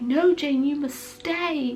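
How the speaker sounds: light, slow, put-on northern English accent. Retelling a story scene, voicing the man's line to Jane with a northern accent. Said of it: "I've adopted a bit of a northern accent here".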